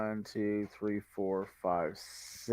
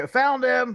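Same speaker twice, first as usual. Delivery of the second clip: shrill, very high-pitched shout; 14 dB louder than usual. Voicing a cleric who yells back to the others: yelling in character. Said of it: "I'm gonna yell, yell back".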